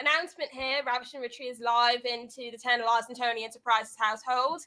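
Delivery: put-on English accent. Making an announcement when asked to: put-on English accent. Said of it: "Let's get an announcement on that English accent".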